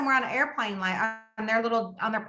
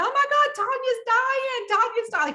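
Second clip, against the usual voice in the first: put-on very high yelling cry; 13 semitones higher, 3 dB louder than usual. Retelling how the kid next door ran up the street: imitating Mike Johns yelling. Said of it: "he was yelling".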